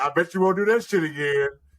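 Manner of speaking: put-on, thick, heavily sarcastic taunting tone. Retelling a girlfriend's teasing jokes after running out of gas: imitating someone being sarcastic. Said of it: "Being sarcastic as hell".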